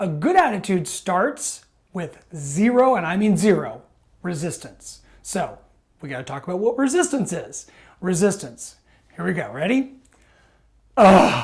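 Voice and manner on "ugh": grudging, reluctant, annoyed ugh groan. Demonstrating resistance in a talk on attitude, reluctant annoyed ugh. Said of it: "Not only did I let you know with my voice".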